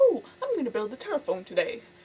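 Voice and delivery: breezy inventor impression, belted out.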